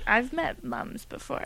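sultry, sensual, seductive voice. Answering whether they have met a mom before: sensual voice. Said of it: "I like how you say it in a sensual voice".

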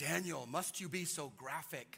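slow, careful, precise, particular diction. Imitating how his mother speaks: imitating his mother's specific way of talking. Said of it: "She's very, uh, specific how she says things".

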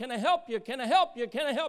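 very loud, high-pitched calling cry. Preaching on Proverbs, voicing Wisdom: acting out Wisdom calling out. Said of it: "Wisdom crieth out".

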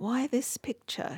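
mumbling under breath. Narrator reads her question about the picture, muttered to herself. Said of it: "she muttered to herself".

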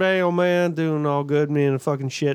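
put-on Southern accent cartoon voice. Comparing two people's Southern accents, the speaker imitates a man with a Boomhauer impression. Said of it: "The other is fucking Boomhauer".

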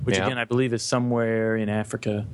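plain

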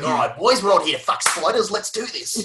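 put-on broad bogan Ocker Australian accent. Debating whether to lean into bogan Ocker slang: broad bogan Ocker Aussie voice. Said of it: "lean into like the bogan Ocker colloquialisms".

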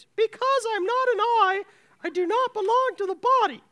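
very high little voice. Reader voices the ear in a passage about the body, high voice. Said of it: "I gave the ear a high voice".

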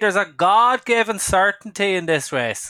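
put-on Irish Wexford accent.

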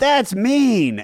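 mock high, shrill, yelled call. Telling how a woman in the crowd yelled at a comic; retelling her yell. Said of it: "this woman yells out".

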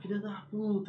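play-acted, very high-pitched shouting. Retelling how he shouted insults at opposing players as a kid: imitating his own past yelling. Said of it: "gritando pros caras, xingando os caras".

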